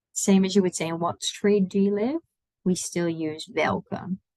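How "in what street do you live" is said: ordinary delivery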